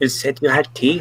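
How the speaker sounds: soft, hushed stage half-whisper. A character about to go to sleep speaks across to Zabornak, half-whispering. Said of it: "she's like whispering over Zabornak".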